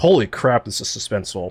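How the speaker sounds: usual speaking voice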